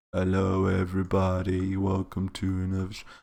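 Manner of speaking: drowsy, very slow, soft, flat, tired drawl. Showing chat how tired the voice sounds today: tired, sleepy voice. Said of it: "you can probably hear my voice. It's just like".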